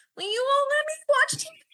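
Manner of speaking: put-on very high, whining, whiny child voice. Speaker imitating their ten-year-old self asking their parents, whiny ten-year-old voice. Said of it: "that's how I sounded when I was 10".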